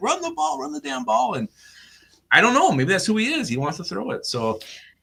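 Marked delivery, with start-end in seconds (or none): 0.0-1.3 put-on, very high-pitched screaming. Retelling what someone yelled at a bar during a game: imitating someone screaming. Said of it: "he was just screaming".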